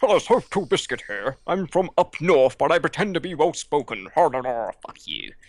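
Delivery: high, sing-song, swooping mocking voice. Mocking a video maker who whines on his channel: mocking TotalBiscuit impression. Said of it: "Biscuit will whine and bitch on his channel".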